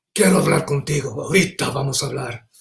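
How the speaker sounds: stern, angry mother voice, gone hard. Describing how her mother's voice changes when angry, imitating angry mom. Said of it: "and the voice really changes".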